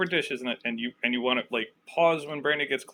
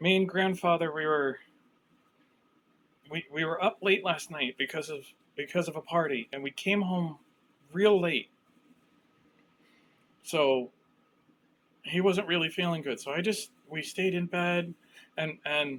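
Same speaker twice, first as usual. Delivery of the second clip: put-on shaken, frightened, stammering girl character voice; 2 semitones higher than usual. Voicing a girl, after a deep breath, telling of people in the den: shaken girl recounting attack. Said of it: "And she takes a deep breath. She goes".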